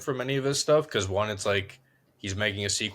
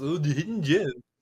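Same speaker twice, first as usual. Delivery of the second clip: high, put-on, dumb-sounding voice; 7 semitones higher than usual. Co-host repeating the other host's impression of them: dumb-sounding impression. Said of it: "Why is that your impression of us?".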